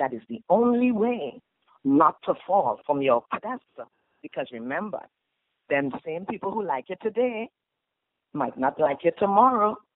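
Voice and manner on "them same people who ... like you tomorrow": Trinidadian accent. Giving life advice, switching into a Trinidadian accent. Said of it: "I said that in my Trinidad accent".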